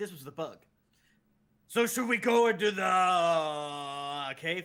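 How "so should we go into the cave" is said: booming yell, very loud, slow and drawn out. Playing a game, a speaker yells louder so another player can hear: yelling loudly. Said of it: "That's me yelling louder".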